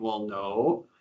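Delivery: low, stunned, fearful voice, acted out. Retelling a man's question, acting out his own answer: imitating a scared, dumbfounded reply. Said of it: "sheer fear and dumbfoundedness".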